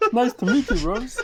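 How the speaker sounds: very high, croaky frog puppet voice. Asked to say it in his Christopher Eccleston impression, speaker does: Christopher Eccleston impression, Kermit-like. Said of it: "Kermit the Frog!".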